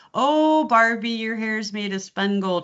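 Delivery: put-on full Minnesota accent with lilting vowels. Speaker mimics a woman born in Minnesota and raised in Wisconsin, Minnesota Fargo accent. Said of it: "It's that Fargo sound".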